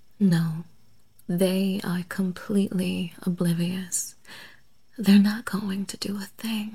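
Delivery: calm, gentle, lulling hypnotist-like soothing voice. Someone who has trapped the listener talks on so others won't notice: soft, soothing tone. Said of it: "As long as I keep talking in this soft, soothing tone".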